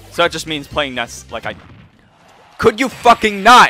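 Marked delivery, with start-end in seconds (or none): 2.5-3.7 loud, heated, angry outburst. Playing Ness in a game, a heated outburst. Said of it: "I'm sorry, I got a little heated".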